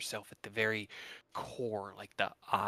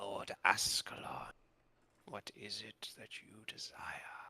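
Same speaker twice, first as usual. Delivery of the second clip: creaky, creaking reptile-creature voice. As narrator, voicing her reply to Lord Ascalon in a deep creaking lizardfolk voice. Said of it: "in that kind of deep and creaking lizard folk voice".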